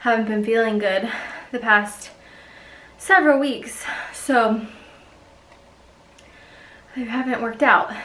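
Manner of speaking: winded, breathing hard. Just after finishing a workout, talking about not working out lately: out of breath. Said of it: "I'm very out of breath".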